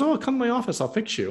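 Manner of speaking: very high, nonchalant, easy, breezy offhand tone. Retelling a doctor's reply to a list of health issues: imitating a nonchalant tone. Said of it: "just that nonchalantly".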